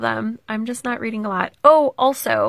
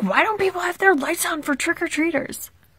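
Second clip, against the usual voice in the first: put-on yelling, higher; 7 semitones higher than usual. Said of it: "he was out in his front yard yelling".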